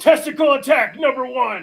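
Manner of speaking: shrill, very high, yelled battle cry. Recounting a fight the whole crowd saw, retelling a yell. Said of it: "I yell".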